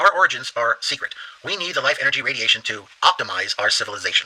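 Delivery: ordinary talk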